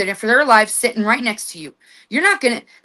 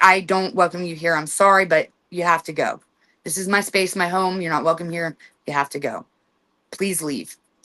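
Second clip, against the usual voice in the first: speaking in a lowered tone; 6 semitones lower, 3 dB quieter than usual. Speaker demonstrating how to tell an unwelcome entity to leave, in a lowered tone. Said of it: "then you can lower your tone".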